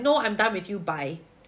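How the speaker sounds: ordinary talk, nothing marked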